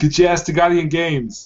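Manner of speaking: put-on heavy Austrian accent. Urging a guy they miss to come back, Austrian Schwarzenegger accent. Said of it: "that was a Schwarzenegger".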